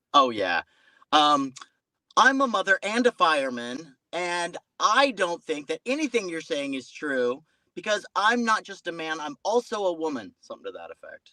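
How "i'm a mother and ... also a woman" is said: high, pitched-up, angry ranting voice. Recalling calling in to a radio show, in a put-on Karen caller voice. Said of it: "crazy liberal Karen sorta thing".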